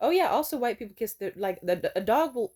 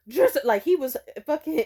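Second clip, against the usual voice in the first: ordinary talk, nothing marked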